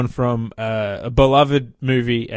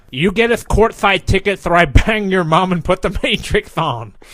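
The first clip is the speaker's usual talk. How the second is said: cartoon duck voice, higher; 7 semitones higher, 4 dB louder than usual. Right after a Bugs Bunny bit, the speaker does a Daffy Duck voice. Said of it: "let me do my Daffy Duck".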